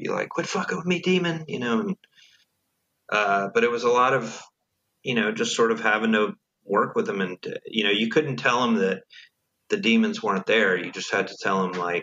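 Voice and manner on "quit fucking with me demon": very high, shrieking meltdown scream. Retelling how Wes would have an outburst: imitating Wes screaming. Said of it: "He would start screaming".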